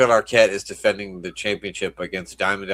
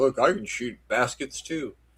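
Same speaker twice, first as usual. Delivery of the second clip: slow, mocking, taunting tone; 4 semitones higher, 4 dB quieter than usual. Voicing a wrestler who is mocking a rival: imitating a mocking wrestler. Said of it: "mocking Mister Perfect".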